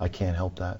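mock flat-toned different voice. Retelling a reply heard after someone said she heard screaming, imitating a flat-toned woman's voice. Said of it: "very flat toned woman in a different voice goes".

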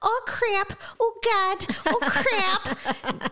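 Minnesota accent with voice pitched very high. Asked by Joe to do it, the speaker shows off a Minnesotan accent. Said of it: "That's the extent of my Minnesotan accent".

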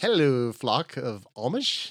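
loud, put-on announcer-style English accent. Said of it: "I'm rolling with my English accent".

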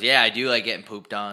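ordinary talk

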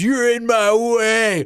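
mock high, drawn-out scream. Retelling a cartoon scene where Gilda screams at Fluttershy: imitating Gilda screaming. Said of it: "and then just screams".

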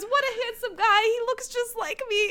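high-pitched, proud, bragging voice.

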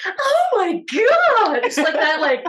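put-on very high, girly squeal.

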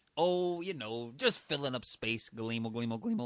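silly low alien character voice. Alien in a comedy sketch answering its fellow alien, goofy alien voice. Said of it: "Welcome to our outer space podcast. We came to Earth 45 million years ago, and we learned about podcasting".

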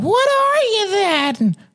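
put-on very high, small child voice. Narrator reading a story, voicing the children's question, imitating children's voices. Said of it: "my interpretation of what children sound like".

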